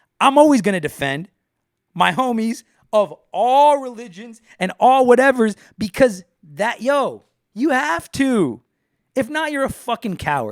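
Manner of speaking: very high, loud, all-out yelling rant. Speaker defending friends of all religions, between songs: yelling. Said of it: "Why am I yelling?".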